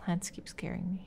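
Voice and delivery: soft, unvoiced, frightened whisper.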